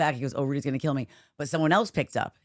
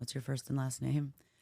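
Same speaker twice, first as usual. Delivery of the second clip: put-on flat monotone, no affect, deadpan; 9 dB quieter than usual. Retelling a call to the IT line, imitating Rudy's flat voice, no affect. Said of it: "there's no affect".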